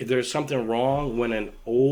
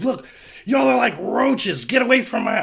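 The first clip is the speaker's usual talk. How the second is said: put-on shrill, very high, loud, furious screaming; 11 semitones higher, 6 dB louder than usual. Retelling his dad yelling off the balcony, the speaker imitates the screaming. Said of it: "he's screaming off the balcony".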